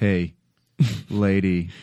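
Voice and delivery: deep, very low, creepy voice. Retelling how a character woke a sleeping woman: imitating a creepy wake-up. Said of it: "woke her up in the creepiest way possible".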